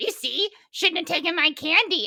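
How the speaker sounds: high, wicked, evil witch-woman voice. Telling about choking on stolen candy, imitating her scolding in a wicked witch voice. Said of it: "when you do that voice".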